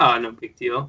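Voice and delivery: offhand, super nonchalant, tossed off. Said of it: "like, just super nonchalant".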